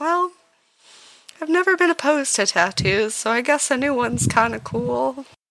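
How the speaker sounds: high-pitched sighing character voice. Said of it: "She just kinda sighs a little bit and is like".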